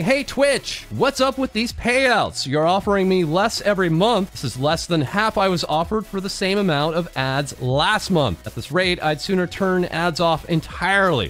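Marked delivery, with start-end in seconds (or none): none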